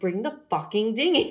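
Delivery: mock, very stern tone. Retelling a movie police officer's line to a friend, super stern order. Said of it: "he's like super stern".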